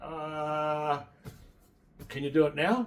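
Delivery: very slow, drawn-out sarcasm with a long uh. Telling the group about a hospital visit, the speaker replays a reply: retold sarcastic question. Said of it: "I was being sarcastic".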